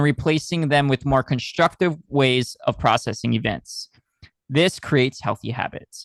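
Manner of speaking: ordinary talk, nothing marked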